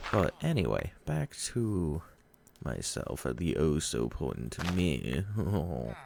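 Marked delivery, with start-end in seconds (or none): 2.6-5.2 slow, drawn-out, sarcastic boastful tone. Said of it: "Sarcasm. Just definitely sarcasm there".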